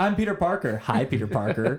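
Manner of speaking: mock overeager, swooping, drawn-out, way too enthusiastic. Imitating Peter Parker introducing himself to heroes: overly enthusiastic Peter Parker impression. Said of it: "He's just way too fucking enthusiastic".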